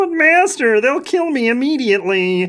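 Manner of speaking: high, squeaky little goblin voice. Narrating a story, the speaker voices the goblin answering its master: squeaky goblin voice. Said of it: "she squeaks".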